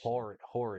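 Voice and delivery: Philly-accented pronunciation. Describing a gas station down the street, the speaker says it in a Philly accent. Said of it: "That's the Philly accent coming out".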